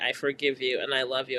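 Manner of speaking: ordinary delivery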